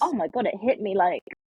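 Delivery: ordinary delivery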